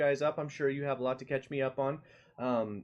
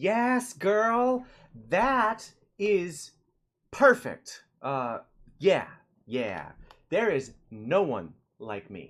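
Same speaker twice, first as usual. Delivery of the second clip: loud, swooping put-on character voice; 3 semitones higher, 7 dB louder than usual. Having promised someone to do the voice, the speaker finally does a put-on voice. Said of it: "I told Veronica I would do the voice".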